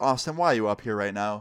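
ordinary talk, nothing marked

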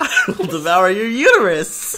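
bright, upbeat, cheery, sweet friendly-hero voice, high, drawn out. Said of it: "Spider-Man says that in his normal cheery voice".

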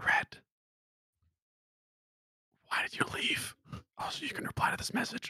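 hushed whisper under the breath. Casting a message spell into an orb to red: whispering a spell message. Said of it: "I will whisper into my".

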